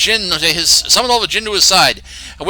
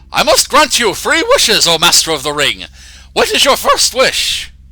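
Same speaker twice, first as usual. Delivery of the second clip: funny put-on character voice with swooping pitch. Speaker does a certain voice for the fellow he's showing: put-on character voice. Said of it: "I'm going to do a certain uh, voice for this fellow".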